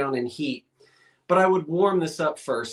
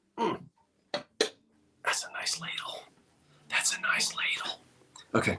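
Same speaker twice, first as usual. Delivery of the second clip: soft, hushed, whispered murmur to oneself; 9 dB quieter than usual. Finishing a countdown and admiring a ladle on stream, whispering. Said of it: "I don't know why I'm whispering".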